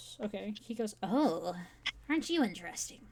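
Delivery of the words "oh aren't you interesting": hoarse, rasping, raspy character voice. Voicing a character on a date: raspy character voice. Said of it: "he's got, like, a raspy voice".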